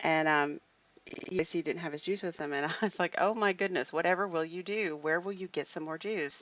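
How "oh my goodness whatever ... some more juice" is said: highly sarcastic, put-on mock concern. Speaker retells what she said to a man without his juice, retelling highly sarcastic mock concern. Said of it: "highly sarcastically".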